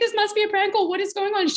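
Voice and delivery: frantic, alarmed, disbelieving, high, panicked voice. Retelling her sister's friend reacting to a phone call, imitating someone panicking. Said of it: "She's just panicked".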